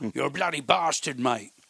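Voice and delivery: put-on English accent, friendly teasing tone. Greeting an old friend the way you always do, in an English accent. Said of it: "but always in an English accent".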